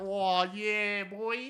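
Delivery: loud, wild, hyped-up screaming. Gamer praising a favorite gun, imitating it screaming at the player. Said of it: "she keeps screaming at you like".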